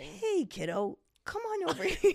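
put-on, very high, slow, patronizing, condescending voice. Imitating how people sometimes talk to him, mock-condescending tone. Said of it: "The tone is kind of sometimes that, where it's very like, condescending".

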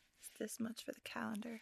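soft, unvoiced whisper.

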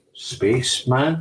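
usual speaking voice

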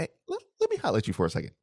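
lively, sing-song, swooping, animated voice. Retelling pulling a friend aside, quoting himself, retelling in a high voice. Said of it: "your voice is high".

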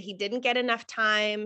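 ordinary delivery

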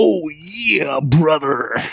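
put-on gravelly wrestler voice. Doing a Macho Man impression about Slim Jims: Macho Man Randy Savage impression. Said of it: "Talking like Macho Man".

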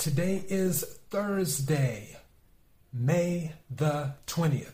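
deliberate, slow, unhurried, drawn-out delivery. Host announcing today's date after nearly forgetting it, said slowly. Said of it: "I said that slow".

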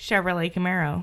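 American accent, dropped low. Playing an accent game, asked to repeat it: american accent. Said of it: "now say it with an American accent".

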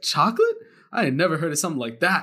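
put-on sassy grandmother voice. Retelling grandma's reply about chocolate sweets: imitating grandma's sassy voice. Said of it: "Why did your grandmother sound like that?".

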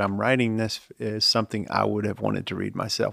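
ordinary talk, nothing marked

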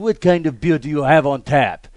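English in a put-on European accent. Retelling ordering beer at a bar in Italy, fake European accent. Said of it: "speaking English but within a European accent".

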